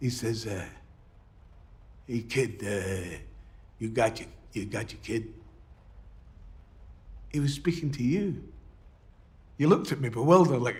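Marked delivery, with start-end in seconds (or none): 2.1-5.3 put-on heavy, thick, soft New York accent. Retelling how a man at the door spoke to them, use a thick new york accent. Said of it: "he's got this thick New York accent".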